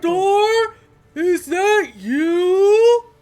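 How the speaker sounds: loud booming giant voice. Narrating a scene, voicing a giant who calls out: loud billowing giant voice. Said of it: "this like loud billowing voice".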